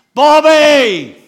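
very loud, high, full-lung shout, drawn out. Retelling the moment he called out to a man, shouting at the top of his lungs. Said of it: "And I shouted at the top of my lungs".

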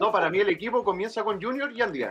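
tongue-in-cheek, ironic. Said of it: "Estoy siendo irónico bastante".

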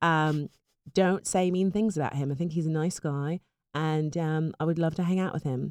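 mock English accent impression. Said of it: "Would you like to do an English accent instead".

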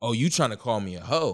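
put-on defensiveness. Retelling a woman's reply after he told her his results were clean: imitating someone getting defensive. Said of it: "she got super defensive because now she's like".

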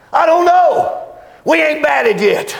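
shouted loudly, high and slow.

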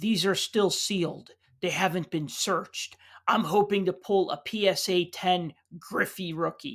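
put-on utterly earnest, dead serious, matter-of-fact tone. Retelling a stranger's reply about his sealed card case: imitating a dead serious reply. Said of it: "looked at me dead serious".

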